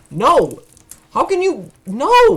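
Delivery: loud, high-pitched shouting. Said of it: "You're shouting at an A I".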